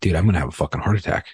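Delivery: mock rushed, tearful panic, losing it. Retelling panicking about a possible heart attack: retelling own tearful words. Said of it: "tearing up, and I'm like".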